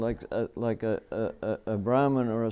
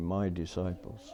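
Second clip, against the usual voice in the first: said almost under the breath, very quiet, hushed; 6 semitones lower, 7 dB quieter than usual. Retelling the old man's next words, imitating Srila Prabhupada, said quietly. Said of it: "he said it very quietly".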